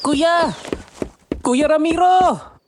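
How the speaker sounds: very high, shrill calling shout. A character calls from outside for Kuya Ramiro: shouting. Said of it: "Bakit ka sumisigaw?".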